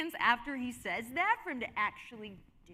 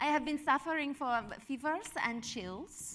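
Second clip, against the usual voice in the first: put-on, fake German accent. Role-playing someone sick and describing symptoms: German accent. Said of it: "the German, yeah, the German".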